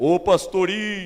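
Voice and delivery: booming, big-voiced, very loud far-carrying shout. Recalling a man who shouted to him in the street as he passed, imitating Seu Tião's booming shout. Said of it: "o seu Tião tinha um vozeirão".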